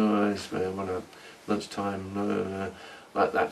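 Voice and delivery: soft, low-level background mumbling. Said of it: "all mumbling and saying".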